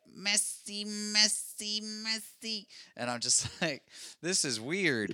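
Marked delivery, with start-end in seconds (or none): 0.2-2.7 cartoon magician voice pitched way up. Recalling the magician from the original animated Frosty, speaker does: Frosty magician voice. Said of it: "that guy's voice where he's like".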